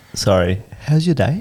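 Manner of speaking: ordinary talk, nothing marked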